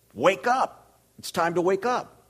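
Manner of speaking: very high yell, stretched long. Retelling how they yelled to wake someone who didn't hear, retelling a yell. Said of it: "I would yell".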